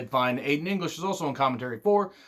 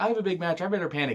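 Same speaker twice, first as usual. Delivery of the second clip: dry sarcasm delivered as exaggerated, played-up panic; 4 semitones higher than usual. Retelling a backstage interview, imitating Sasha's sarcastic panic. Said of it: "I sense much sarcasm in you ladies".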